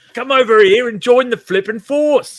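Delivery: put-on English accent, pushed up high and loud. Act out the actor's lines before he was overdubbed, as Darth Vader with an English accent. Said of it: "played Darth Vader with an English accent".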